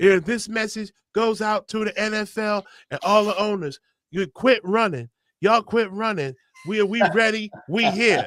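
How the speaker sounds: mocking, soft, fake-tough put-on voice. Speaker retelling a man's message to the NFL after his workout: fake Mike Tyson voice. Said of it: "like fake Mike, Mike Tyson voice".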